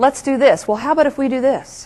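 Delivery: soft manner. Demonstrating for listeners how women include people, in a softer style. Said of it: "listen to the difference ... this softer style".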